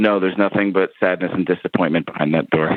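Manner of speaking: play-acted, low, flat, bone-dry deadpan. Retelling a reenactor's answer when asked about the exit: retelling a deadpan reply. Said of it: "the guy just deadpan goes".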